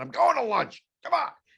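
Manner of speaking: very high, loud, furious angry shout. Retelling a coworker storming off: imitating someone screaming. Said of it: "screamed at everybody and said".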